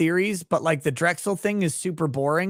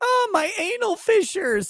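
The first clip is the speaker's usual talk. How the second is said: put-on crying voice, very high, sobbing. Retelling a joke story to chat: imitating Johnny Depp crying. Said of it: "he was crying".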